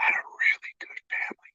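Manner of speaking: hushed, very quiet whisper. Retelling how someone in an interview whispered a line: imitating a whisper. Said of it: "And he whispers".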